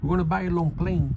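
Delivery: put-on thick Puerto Rican Spanish accent. Quoting the speaker's mom naming a record, in a thick Puerto Rican Spanish accent. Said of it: "with that thick Puerto Rican Spanish accent".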